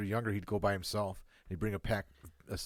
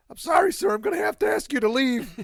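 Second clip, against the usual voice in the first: put-on very high, loud squeaky kid voice; 10 dB louder than usual. Teasing a guy who kept getting busted, squeaky The Simpsons kid voice. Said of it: "with the squeaky voice".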